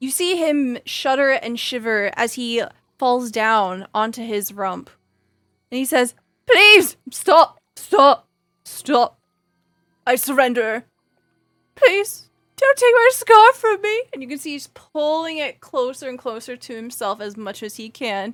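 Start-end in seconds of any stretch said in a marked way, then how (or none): 6.5-14.0 high, loud, blubbering, sobbing ugly crying. Voicing a defeated brigand prince begging to keep his scarf: ugly crying. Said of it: "immediately starts to ugly cry".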